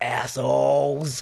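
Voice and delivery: muttered quietly under the breath. Retelling a film scene where the publican speaks: muttered under his breath. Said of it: "he says under his breath".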